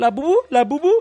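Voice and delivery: put-on sweet, polite voice. Speaker retelling a seller pitching his product to them, imitating a sweet, cordial voice. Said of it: "uma voz assim, doce, cordial".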